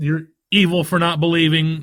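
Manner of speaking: usual speaking voice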